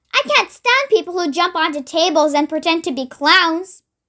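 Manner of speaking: ordinary delivery, nothing marked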